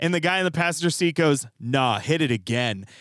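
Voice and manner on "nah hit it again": menacing, low, very slow, drawn-out voice. Recounting the words of the guy in the passenger seat, retelling a threatening order. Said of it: "like in a threatening way".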